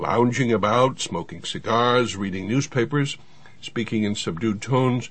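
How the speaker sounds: ordinary delivery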